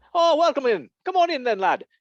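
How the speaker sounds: clumsy, bad put-on Irish accent, very high pitched. Imagining arriving in ireland, speaking in a bad irish accent. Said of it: "That was my bad Irish accent".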